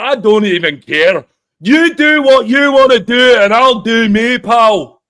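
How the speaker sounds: put-on, loud, high, wee Scottish accent. Asked for his best Scottish accent, the speaker answers in a Scottish accent. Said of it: "Give us your best Scottish accent there".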